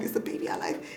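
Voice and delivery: hushed, unvoiced, panicked whisper.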